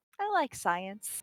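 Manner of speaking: soft, quiet voice with a little smile. Retelling a close-up scene, imitating Spock with a little smile. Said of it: "with a little baby Vulcan smile going".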